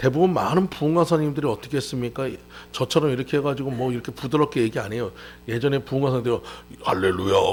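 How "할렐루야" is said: very low, deep voice, pushed right down. Imitating old-time revival preachers saying hallelujah, in a deep low voice. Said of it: "이렇게 딱 목소리가 깔아줘야지만".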